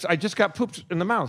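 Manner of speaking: plain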